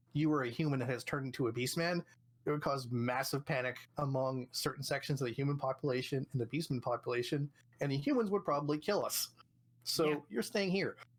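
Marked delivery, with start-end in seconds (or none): none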